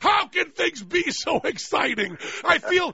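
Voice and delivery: mock breathless excitement, shouted high and thrilled. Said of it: "you can even hear the excitement".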